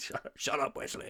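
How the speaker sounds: breathy, whispered, put-on voice. Repeating a joke line to another speaker: Patrick Stewart voice. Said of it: "I just did my best Patrick Stewart voice".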